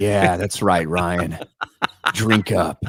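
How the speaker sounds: put-on, low, slow, drawn-out, suggestive innuendo-laden delivery. Teasing a co-host by mimicking how he said a line, mock-suggestive tone. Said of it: "That's how you said it".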